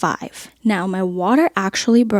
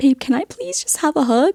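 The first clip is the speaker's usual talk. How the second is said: anxious, nervous pleading voice, pitched up; 6 semitones higher than usual. Retelling asking a husband for a hug while in labor: imitating own nervous plea. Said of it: "I'm so nervous".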